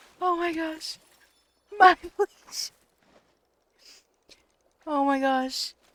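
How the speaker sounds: words broken up by hard laughter. Reacting to something in front of the others: laughing so hard while talking. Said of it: "I'm laughing so hard".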